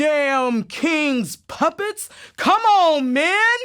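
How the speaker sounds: very slow, drawn-out, high-pitched call. Retelling a signal call to frighten the Tories: imitating deepest voice, militia leader calling. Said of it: "used my deepest voice to sound like a militia leader calling".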